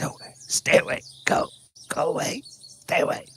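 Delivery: put-on wheezy, pained voice of a hurt man. Voicing an injured man who warns the players off: wheezing voice. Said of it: "kind of a wheezing voice that says".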